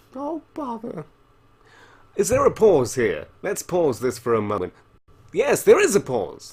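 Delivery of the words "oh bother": very high, very soft, hushed cartoon bear voice. Speaker noticing they sound like Winnie the Pooh, Winnie the Pooh voice. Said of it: "I sound a bit like Winnie the Pooh".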